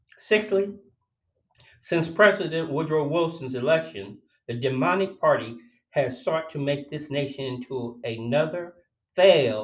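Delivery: normal talking voice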